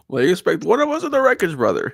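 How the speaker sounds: menacing villain voice. Right after 'Bane voice' is called out, the speaker performs a Bane voice. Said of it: "Bane voice".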